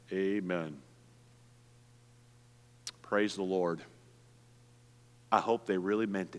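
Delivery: very low, level, flat deadpan. Speaker imitates the average Baptist's reply to news of someone's conversion: mock deadpan response. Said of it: "their response is this deadpan".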